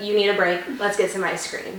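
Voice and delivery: ordinary talk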